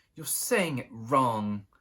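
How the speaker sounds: sharp, snapping. Narrating a story, one character corrects another's spell, snapping a correction. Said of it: "Harry heard Hermione snap".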